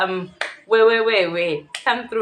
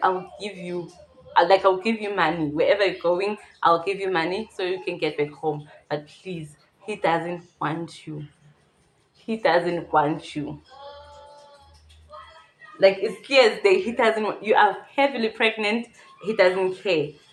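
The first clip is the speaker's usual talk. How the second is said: ordinary talk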